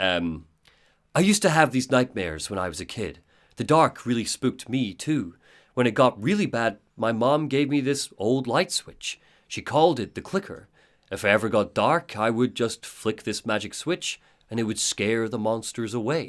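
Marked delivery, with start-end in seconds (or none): 1.1-16.3 put-on storyteller narration voice. Retelling a scene, Alan tells Alice a story: Alan's narrator voice. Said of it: "He puts on his narrator voice".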